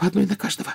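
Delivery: quiet, trembling, shaky whisper. At a window watching owls arrive, a girl speaks in a trembling whisper. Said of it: "прошептала она дрожащим голосом".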